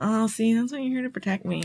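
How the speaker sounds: put-on soft, cutesy, babyish baby-talk voice. Recapping a scene, mocking a woman in it: imitating her baby voice. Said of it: "kind of baby voice and smile".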